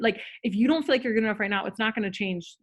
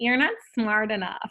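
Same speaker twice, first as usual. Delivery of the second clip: deliberately dumb, irritating, mocking voice. Showing how to repeat a negative thought to oneself: annoying voice. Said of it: "I'll say it in like this annoying voice".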